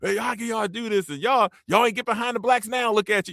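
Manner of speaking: put-on hollering rant. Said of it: "He always yelling at them about".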